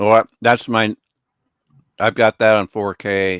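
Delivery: eating while talking with mouth full. On a call about movies to test a new TV, talking while eating. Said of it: "I'm still eating my supper".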